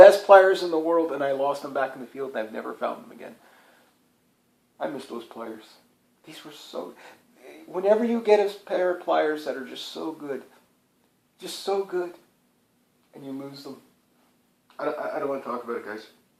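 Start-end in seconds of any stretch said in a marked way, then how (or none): 4.8-16.1 becoming emotional, softer. Talking to the guys about losing a favourite pair of pliers, getting emotional. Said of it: "I'm getting emotional now".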